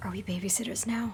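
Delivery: whispering. Player voicing Holloway, standing close to Blake and the others, whispering. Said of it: "he just whispers to them".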